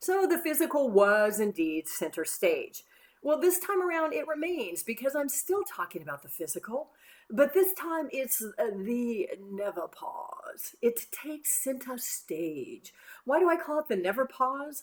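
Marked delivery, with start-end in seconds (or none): 8.7-10.7 gentle put-on British accent. Introducing this time's center-stage topic by name: british accent. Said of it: "why I'm speaking in a British accent when I say the never pause".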